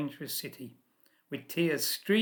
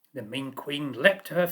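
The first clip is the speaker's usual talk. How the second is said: ordinary delivery, nothing marked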